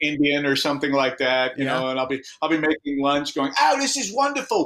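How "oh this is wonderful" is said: fake English accent, higher pitch. Retelling talking while making lunch at home: put-on english accent. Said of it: "I'll be English".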